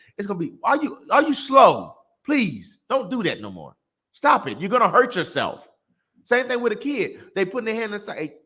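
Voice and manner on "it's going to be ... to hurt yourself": put-on exasperated, impatient scolding tone. Explaining to mama how patience wears thin: acting out impatient scolding. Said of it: "your patience gets thin".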